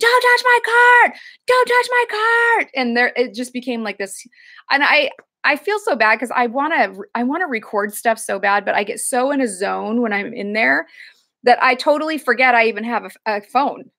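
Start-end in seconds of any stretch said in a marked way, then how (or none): 0.0-2.7 mock shrill, very high, repeated screaming. Retelling a fight between two regulars over a cart; retelling a scream. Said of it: "he was screaming at him".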